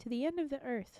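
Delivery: plain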